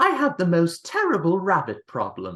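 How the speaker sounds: high pitch swooping through the words. Praising an actress's film voice, imitating Lady Tottington voice. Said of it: "I love her voice. It's like".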